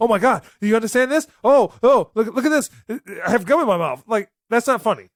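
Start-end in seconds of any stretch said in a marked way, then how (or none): 0.0-4.0 fast, rambling, know-it-all chatter. Mocking a movie character who knows too much: imitating Brian Tyree Henry's ramble talk. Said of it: "a character that knows too much and he speaks too quickly".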